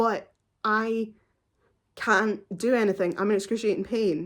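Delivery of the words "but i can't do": ordinary delivery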